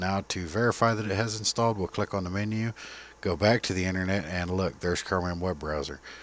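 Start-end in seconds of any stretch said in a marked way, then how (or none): none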